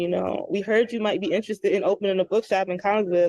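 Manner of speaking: ordinary talk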